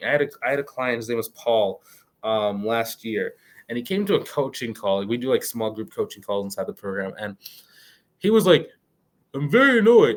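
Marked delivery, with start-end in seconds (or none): 9.3-10.2 mocking imitation voice, higher-pitched and louder. Retelling what a coaching client said, mocking imitation of a client. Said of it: "I am making fun of him".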